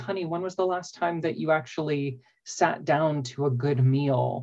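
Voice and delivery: ordinary talk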